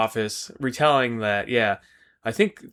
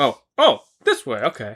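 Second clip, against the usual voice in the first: put-on confused voice, louder; 4 dB louder than usual. Retelling a scene, imitating a confused Commissioner Gordon. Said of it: "looks stupid as shit when he's trying to figure it out".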